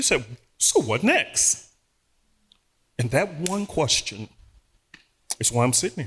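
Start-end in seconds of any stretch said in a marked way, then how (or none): 0.6-1.6 play-acted cheery, upbeat voice. Retelling a voice that hit the soul one day: imitating a cheerful voice. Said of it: "But this voice was cheerful".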